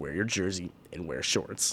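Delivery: angry, mad coach voice. Retelling how the furious coach answered the news: imitating Coach Jaeger. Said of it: "That's exactly how he talks".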